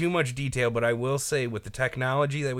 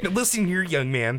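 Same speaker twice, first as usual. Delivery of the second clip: mock stern scolding tone, higher pitch; 5 semitones higher than usual. Imitating a giant man with a mohawk lecturing someone at the door: imitating a stern scolding. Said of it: "Gave him a stern talking to".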